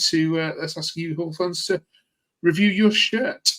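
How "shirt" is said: stressed 'shirt', higher pitch. Presenter asks Hull fans to review their single shirt, with stress on 'shirt'. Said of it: "I stress the word shirt".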